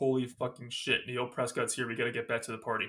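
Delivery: ordinary talk, nothing marked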